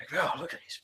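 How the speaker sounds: whispered, hushed and breathy gossipy murmur. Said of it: "not loud enough for you to hear".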